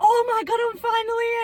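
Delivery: relieved excitement. Retelling a film scene as she finally reaches the Emerald City: mock-relieved, excited. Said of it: "And then she'll like".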